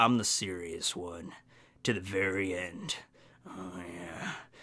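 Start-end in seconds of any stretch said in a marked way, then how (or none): 0.0-3.0 very low, soft, slow, hushed. Imitating Shiryu as the serious one to the end: Shiryu voice. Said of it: "Shiryu's just like".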